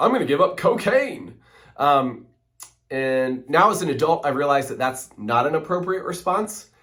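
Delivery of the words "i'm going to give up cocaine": mock flippant delivery, higher pitch. Recalling a teenage answer to Mom's question about Lent, retelling a flippant reply. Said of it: "I would have some flippant response like".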